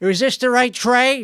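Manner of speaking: very frantic, put-on Chicago accent. Switching accents mid-bit, speaking in a very frantic Chicago accent. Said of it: "a very frantic Chicagoan".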